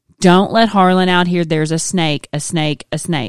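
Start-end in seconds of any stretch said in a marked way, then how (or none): none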